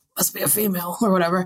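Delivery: put-on voice, strained in the throat. Retelling what a character says on seeing a griffin, [name]'s throat-straining voice. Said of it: "Oh, my voice. Oh, my throat hurts".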